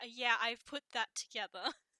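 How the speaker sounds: dry, flat, expressionless deadpan delivery. Voicing a character answering with a look back: deadpan. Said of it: "It's just a deadpan look back".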